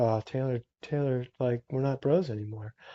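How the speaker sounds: mock-mournful tone. Retelling getting ghosted by someone, acting out past sadness. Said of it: "I got like all sad".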